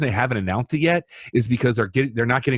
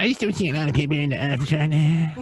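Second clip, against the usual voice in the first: put-on cartoon kid voice, higher; 5 semitones higher than usual. Saying a line again after being asked for an Eric Cartman voice. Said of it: "say it in the Eric Cartman voice".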